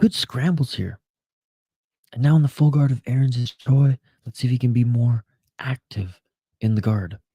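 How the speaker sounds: hushed whisper. Commentating a fight while roommates sleep at night: whispering. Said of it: "sorry I gotta whisper through this one".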